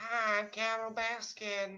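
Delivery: high, very slow character voice, each word drawn out. Offering to voice a role in a pretend game script: Carole Baskin impression. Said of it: "I can be Carol Baskin".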